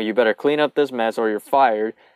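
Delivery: ordinary talk, nothing marked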